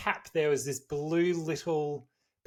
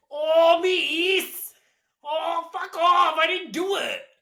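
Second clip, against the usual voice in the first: put-on very high, loud, whingy teenage boy whine; 14 semitones higher, 8 dB louder than usual. Asked how they would say the line, the speaker gets into character: put-on character voice. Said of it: "let me get into character".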